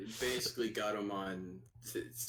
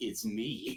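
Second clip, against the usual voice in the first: put-on cocky voice. Retelling a scene where Hawkmon answers proudly: cocky Hawkmon line. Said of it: "puts on a cocky face".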